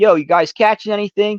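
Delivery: very high, carrying yell across the water. Telling of spotting a boat, the speaker retells yelling across to it. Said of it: "I yell".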